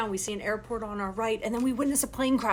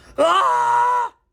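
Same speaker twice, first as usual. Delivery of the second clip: high, loud scream.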